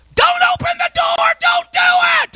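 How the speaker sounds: mock shrill shout, very high-pitched, screaming. Retelling a story of a mom watching a movie: imitating a scream. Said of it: "she screamed out".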